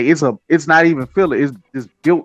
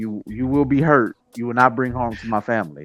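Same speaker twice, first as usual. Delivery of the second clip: put-on soft, gentle menacing tone, quieter; 4 dB quieter than usual. Retelling how the dad warned a bear: imitating a quiet, gentle warning. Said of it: "he said it so quietly, so gently".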